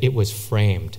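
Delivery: play-acted low, quiet, dead-serious, flat deadpan. Recalling an office coworker delivering his joke's punchline, mimicking a deadpan, serious voice. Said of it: "in this deadpan, serious voice".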